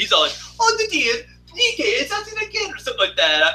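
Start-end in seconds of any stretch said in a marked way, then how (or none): 0.6-2.7 put-on Italian accent, pitched very high. Retelling a cartoon scene, doing the character's lines: Mario Italian accent. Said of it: "I do, like, the Italian accent".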